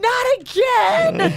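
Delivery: yelled through tears, very high-pitched. Telling how he keeps getting hurt, imitating yelling while crying. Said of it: "yelling as he's crying".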